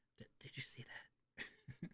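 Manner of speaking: slow, very quiet, hushed whispered aside. Whispering in character to another party member: whispering. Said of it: "I'm just whispering to him".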